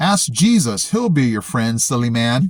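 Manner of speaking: normal talking voice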